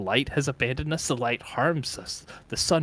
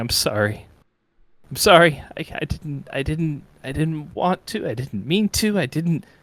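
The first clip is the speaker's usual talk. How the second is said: loud, broken sobbing through the words; 3 semitones higher, 5 dB louder than usual. A character in a role-play scene breaks down, sobbing and crying. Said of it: "So he just starts sobbing and crying".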